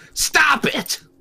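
very high, loud, put-on angry yell. Showing off a fake angry voice: fake angry voice. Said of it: "I can do angry, angry [name]'s".

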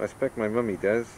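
usual speaking voice

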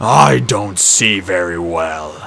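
deep growling monster voice. Reading a story aloud, voicing Polyphemus as he confronts Groder: Polyphemus growling. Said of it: "he growled".

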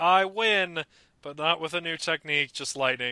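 ordinary talk

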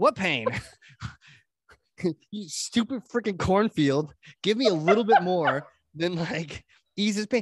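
acted frustrated, exasperated, fed-up outburst. Retelling the movie Field of Dreams: imitating a frustrated movie hero. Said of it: "he's like".

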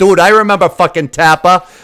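loud, put-on Boston accent. Recalling someone named Tapper, said in a Boston accent. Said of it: "I'm saying it with my Boston accent".

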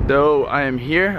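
ordinary talk

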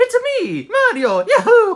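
very high, squeaky cartoon video-game hero voice. Playing Mario in a comedy skit: Mario voice. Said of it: "Mario voice (self-introduced as Mario)".

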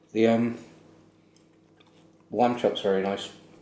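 speaking with mouth full of food, chewing. Commenting on a dish while eating, talking with mouth full. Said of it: "sorry, I just took a bite".

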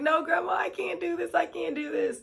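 acted, soft, high, tearful sobbing pleading voice. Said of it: "I'm bawling my eyes out".

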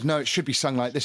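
ordinary talk

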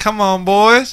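put-on high Indiana accent. Retelling how a man came out with an Indiana accent, in a put-on Indiana accent. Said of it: "he comes out with some Indiana accent".

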